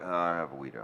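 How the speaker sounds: very low, hushed mumble under the breath. Act out how the other person told you about their allergy, imitating someone about to mumble. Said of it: "almost like you were going to start mumbling".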